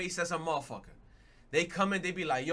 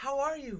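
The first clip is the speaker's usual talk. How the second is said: bright, cheerful, acted-out cheery tone; 9 semitones higher than usual. Retelling how a woman at the counter greets him: imitating a cheerful greeting. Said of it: "mad, like, cheesing".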